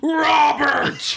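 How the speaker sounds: put-on, high screaming at full lung power. Retelling opening a gift bag at home: imitating own shout. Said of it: "at the top of my lungs, just went".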